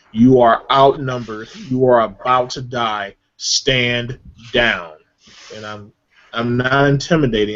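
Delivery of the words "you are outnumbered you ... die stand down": very stern, commanding, authoritative voice. A player character using persuasion on two wounded foes, very commanding voice. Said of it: "I'm going to say in a very commanding voice".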